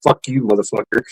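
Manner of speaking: mock muttering under breath. Retelling how a passerby muttered an insult: imitating someone muttering under their breath. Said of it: "says something under their breath".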